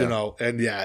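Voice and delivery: ordinary talk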